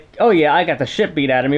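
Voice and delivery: plain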